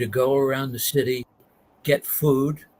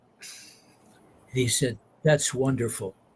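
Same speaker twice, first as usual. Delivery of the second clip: normal talking voice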